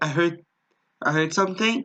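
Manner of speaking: normal talking voice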